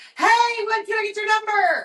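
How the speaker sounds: very high-pitched, loud yelling. Retelling how a guy on the street acts: imitating a guy yelling. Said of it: "he yells at me down the street".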